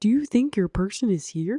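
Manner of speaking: put-on male puppet-style character voice. Retelling Gary asking whether their person is here, in Gary's Muppet voice. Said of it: "comes out in his Muppet voice".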